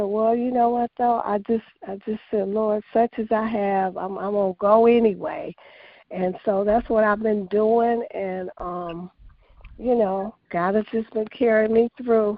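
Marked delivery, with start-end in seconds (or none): none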